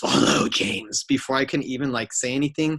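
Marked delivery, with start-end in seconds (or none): 0.0-1.0 creepy, sinister horror-villain voice. Retell how the man on the red carpet turned and greeted you first, in a Freddy Krueger voice. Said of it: "he says in a Freddy Krueger voice".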